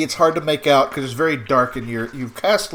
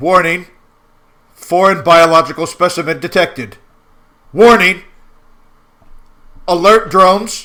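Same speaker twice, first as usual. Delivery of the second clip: loud, echoing robotic alarm-style announcer voice; 2 semitones higher, 7 dB louder than usual. As light shines inside, a voice suddenly answers: loud echoing machine voice. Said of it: "a machine like voice that all of a sudden echoes very loudly".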